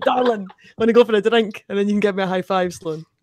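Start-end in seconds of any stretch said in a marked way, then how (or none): 0.0-1.6 rough Glaswegian accent, laid on, pitched up. Acting out picking up women at a bar: rough Glaswegian accent. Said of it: "Rough Glaswegian darling".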